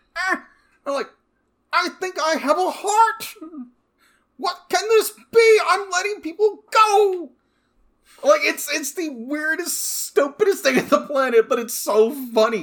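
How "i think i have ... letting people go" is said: put-on voice pitched up higher. Retelling a terrible movie scene where the villain finds a heart: Skeletor voice. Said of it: "and Skeletor has a heart".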